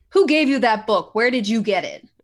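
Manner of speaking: loud, menacing, intimidating, in-your-face tone. Questioning a character about a book during an intimidation check: intimidating. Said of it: "I'm gonna do an intimidation check".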